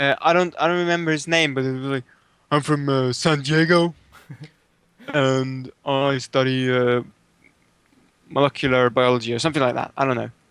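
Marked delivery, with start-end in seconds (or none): 2.5-9.6 put-on deep-voiced, slow American accent. Recalling a guy introducing himself, imitating his deep voice and american accent. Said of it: "it was like a fucking deep voice, American accent".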